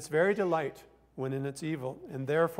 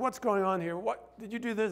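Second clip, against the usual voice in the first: put-on yelling, raised pitch; 5 semitones higher than usual. Acting out someone at home yelling at a messy house: imitating someone yelling. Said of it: "you're yelling because it's so messy".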